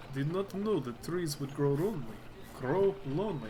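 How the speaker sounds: put-on character voice, Russian accent. Voicing Gorik answering a tree spirit: Gorik voice with Russian accent. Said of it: "Gorik's voice is harder to do than I thought".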